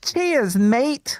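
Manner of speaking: Australian accent. Trying a two-word accent impression for the others: accidental Australian accent. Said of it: "why do I sound Australian?".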